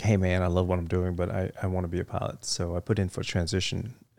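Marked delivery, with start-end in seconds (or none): none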